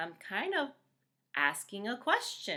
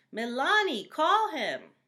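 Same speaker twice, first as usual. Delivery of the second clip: excited, high, loud yell; 7 semitones higher, 7 dB louder than usual. Miss g repeats the sentence for the class: yelled out excitedly. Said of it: "I yelled it out. I was excited".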